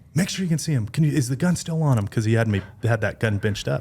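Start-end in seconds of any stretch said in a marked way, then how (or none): 0.1-2.0 raised, pitched-up, urgent barking yell. Telling a story, the speaker acts out their dad's words: retelling dad yelling. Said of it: "my dad's literally yelling at me".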